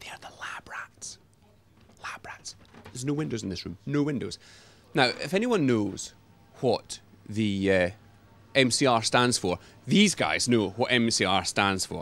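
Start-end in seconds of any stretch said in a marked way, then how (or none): 0.0-2.6 hushed whisper, very quiet, barely voiced. Showing viewers into the studio's windowless room: whispering. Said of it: "I have to whisper this bit".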